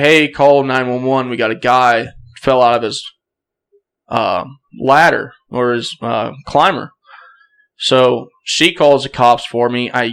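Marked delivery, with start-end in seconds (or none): none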